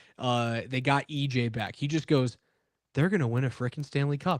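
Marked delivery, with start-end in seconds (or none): 3.0-4.4 put-on mutter under the breath. Retelling what Scotty Hastings said on his show after a trade: muttering under his breath. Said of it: "under his breath".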